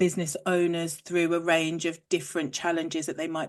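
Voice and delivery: ordinary talk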